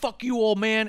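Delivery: shrill, very high pitch, slow, drawn-out, scornful tone. Retelling a wrestling segment, quoting Bobby Lashley: imitating Bobby Lashley. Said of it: "Lashley's all like".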